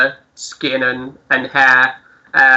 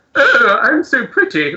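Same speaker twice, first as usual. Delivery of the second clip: very high-pitched, put-on upper-class posh tones; 11 semitones higher than usual. Describing someone making them have little conversations, really posh voice. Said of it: "doing like a really posh".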